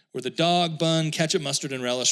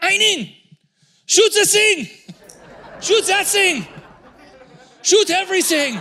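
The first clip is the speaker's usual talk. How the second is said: mocking impression, much higher pitch, louder; 9 dB louder than usual. Describing her taking pictures after they traded seats, doing a picture-Nazi impression. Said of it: "she is somewhat of a picture Nazi".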